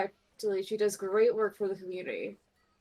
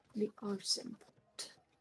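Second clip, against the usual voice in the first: quiet, breathy, hushed, secretive whisper; 8 dB quieter than usual. Voicing a character who looks around first: saying quietly. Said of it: "she looks around and says quietly".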